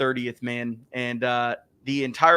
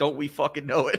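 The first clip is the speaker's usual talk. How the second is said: put-on mutter under the breath. Retelling what the coach said under his breath: imitating a mutter under breath. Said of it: "he said under his breath".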